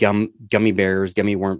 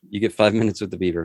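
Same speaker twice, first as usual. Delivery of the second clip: normal talking voice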